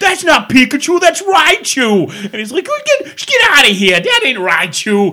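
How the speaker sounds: put-on thick, heavy, dumb-sounding Boston accent. Retelling a viral video of two Boston roommates arguing, in a thick, dumb Boston accent. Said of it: "thick, dumb Boston accents".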